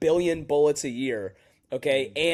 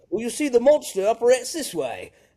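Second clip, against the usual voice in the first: put-on calm, matter-of-fact British accent, pitched up; 7 semitones higher than usual. Mocking old monster movies, voice the scientist who explains in a calm British accent. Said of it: "a British man in a lab coat would walk in and explain".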